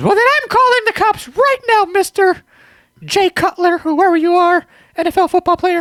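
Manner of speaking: squeaky, very high voice. Retelling a woman's threat to call the cops over damage, in a Mickey Mouse voice. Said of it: "Why does it sound like Minnie Mouse".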